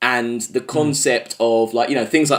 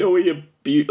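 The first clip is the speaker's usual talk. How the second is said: mock crying, higher pitched; 4 semitones higher than usual. Retelling a film scene where a woman speaks: imitating a woman crying. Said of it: "the woman's, like, crying, like, saying".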